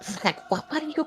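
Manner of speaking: very hushed, fast, frantic, panicked, stumbling whisper. Voicing a character heard from below during a drop: panicked whisper. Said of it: "a very panicked whisper".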